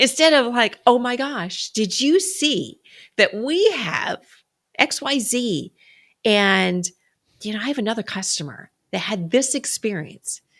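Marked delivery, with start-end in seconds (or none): 0.9-5.7 lively, eager, excited, pitched-up, very slow delivery. Showing how to tell a customer about a product, excited enthusiastic tone. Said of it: "you see the difference just even in my tone ... I'm excited".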